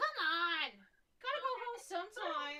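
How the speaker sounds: very loud, very high-pitched yelling. Narrator voices a character yelling inside the shop, yelling. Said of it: "kind of yelling inside the shop".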